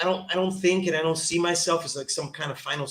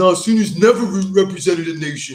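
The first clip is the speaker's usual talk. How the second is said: put-on loud, goofy, dumb troll voice; 10 dB louder than usual. Acting out what people would say about him, in a troll voice. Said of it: "that's my uh, troll voice".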